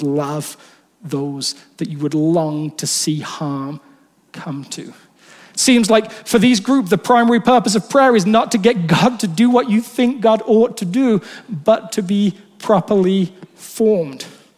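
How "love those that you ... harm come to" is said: put-on grave, serious voice, low and soft. Speaking about prayer, the speaker quotes Jesus's words, acting Jesus in a put-on serious voice. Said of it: "in a serious voice".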